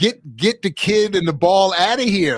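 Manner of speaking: put-on screaming. Retelling watching a soccer scene in a film: retelling screaming at the screen. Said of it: "I was screaming at the, at the screen".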